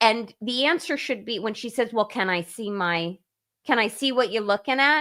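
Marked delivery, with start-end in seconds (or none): 1.9-5.0 put-on Brooklyn accent. Retelling what she says when questioned, in a put-on brooklyn accent. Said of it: "now suddenly she's from Brooklyn".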